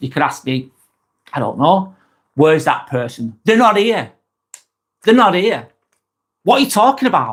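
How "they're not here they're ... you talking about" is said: dismissive, rude, snubbing tone, pitched up. Suggesting replies to a question about where someone is, rude reply. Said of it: "Or I could say something really rude".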